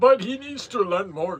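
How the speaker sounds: loud, belted, high-pitched put-on Indian accent. Dad adds a remark while reading an English course answer, Apu-style Indian accent. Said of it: "Stop making an Indian accent".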